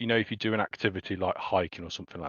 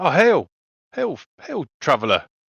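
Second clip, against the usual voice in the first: loud, high shout projected across distance; 7 semitones higher, 7 dB louder than usual. Voicing a traveller calling across the road: shouting a greeting across. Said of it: "this gentleman shouts across to you".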